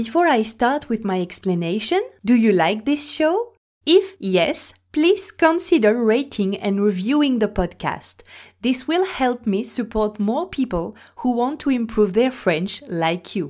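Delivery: English spoken with a French accent. Asking listeners to rate and review the podcast: accented english. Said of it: "mon magnifique accent anglais".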